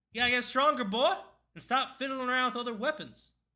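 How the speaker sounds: put-on very high-pitched, loud Southern US accent. Voicing a female character answering the player's question, southern accent. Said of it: "why is she southern now?".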